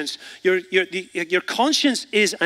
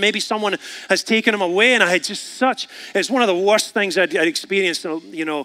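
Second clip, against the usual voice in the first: normal talking voice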